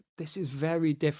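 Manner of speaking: ordinary delivery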